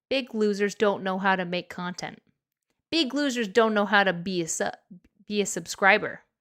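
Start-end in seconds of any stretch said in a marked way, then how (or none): none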